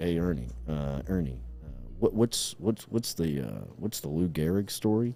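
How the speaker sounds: soft, hushed, secretive stage whisper. Retelling a coach on the headset asking an assistant: imitating a half-whisper. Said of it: "he's whispering up to one of his".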